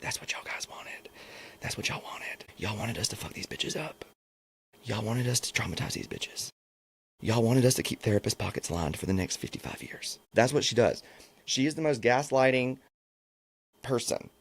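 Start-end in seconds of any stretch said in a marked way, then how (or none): 0.0-10.2 hushed, soft, breathy whispered talk. Imitating Tyra talking in a soft whispering voice. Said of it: "kinda talk in her soft voice".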